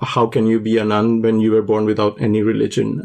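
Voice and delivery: normal talking voice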